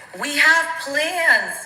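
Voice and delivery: acted-out, loud, high-pitched screaming. Retelling how she called someone and started yelling: retelling her own scream. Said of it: "I literally start screaming at him".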